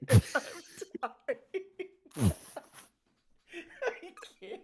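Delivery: very high, laughter-choked, laughing through tears. Introducing his guest, the host breaks down, crying with laughter. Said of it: "I'm crying. I'm crying".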